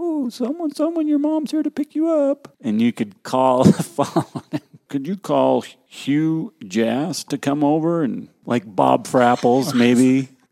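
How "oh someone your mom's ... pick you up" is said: very high-pitched loudspeaker PA announcer voice. Reminiscing with others about pranks on the PA announcer: imitating Sandy on the PA. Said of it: "She used to be on the PA announcer".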